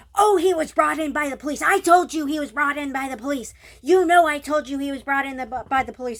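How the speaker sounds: frantic, angry, loud, furious screaming. Retelling how a man ran out screaming at the speaker; retelling a furious scream. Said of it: "he's like screaming at me".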